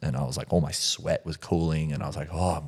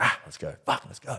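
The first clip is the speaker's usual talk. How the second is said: put-on, high, fired-up, hyped-up cry; 5 semitones higher than usual. Retelling pumping himself up to keep going: imitating his own hyped-up shout. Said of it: "getting all this, like, hype energy".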